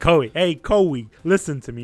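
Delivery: slow New York mobster gangster accent. Showing Chris how not to address Koei, in a New York gangster voice. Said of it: "like a New York gangster".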